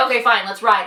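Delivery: normal talking voice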